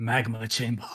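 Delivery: pretend whisper said loud. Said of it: "Just pretend like you're whispering".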